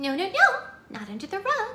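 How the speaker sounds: very high, sing-song, swooping princess voice. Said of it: "Or she goes".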